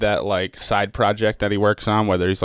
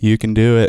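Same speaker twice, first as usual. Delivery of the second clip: loud, dull, flat, level monotone; 5 dB louder than usual. Mocking a dull motivational speaker: imitating a monotone voice. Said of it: "a guy in a monotone voice to just be like".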